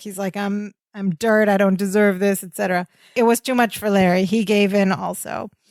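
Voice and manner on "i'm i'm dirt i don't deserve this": put-on pathetic self-pitying voice. Retelling a scene where the character begs to stay: imitating pathetic Twinkasetti. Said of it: "Twinkasetti is turning very pathetic".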